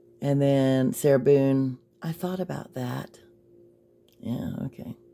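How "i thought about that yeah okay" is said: soft, breathy, whispery, very quiet voice. Sarah Boone's reply to the detective's last question, putting on her soft voice. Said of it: "how she would read it in her soft voice".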